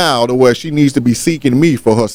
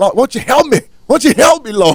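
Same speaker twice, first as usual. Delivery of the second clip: put-on impassioned, fervent pleading, very high; 10 semitones higher than usual. Retelling how the speaker prays once getting into it: mock fervent pleading prayer. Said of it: "you get up there and you get into the thing".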